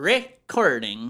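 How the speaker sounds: first syllable re of recording stressed hard. Conversation about how a word was said, recording stressed on re. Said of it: "I put emphasis on re".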